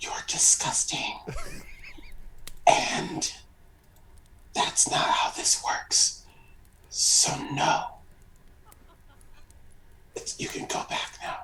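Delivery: quiet whispered line. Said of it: "whisper back".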